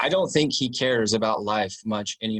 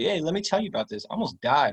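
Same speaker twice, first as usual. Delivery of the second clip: mock casual, breezy, nonchalant, pitched up; 7 semitones higher than usual. Retelling how dad casually mentioned nearly dying: imitating a nonchalant tone. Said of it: "he just said it so nonchalantly".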